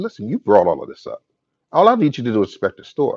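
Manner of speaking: normal talking voice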